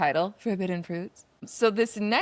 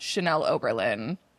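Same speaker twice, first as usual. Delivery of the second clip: usual speaking voice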